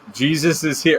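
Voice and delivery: screaming.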